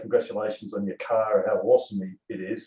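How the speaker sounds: ordinary talk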